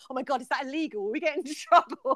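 mock worried fretting. Recounting a chat about messaging someone on Facebook; retelling a worried reaction. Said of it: "I got all worried and I went".

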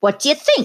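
impulsive, impetuous, pressing voice, pitched high. A tipsy man among bookshelves wheels round to new arrivals; impetuous demand. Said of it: "He demanded impetuously".

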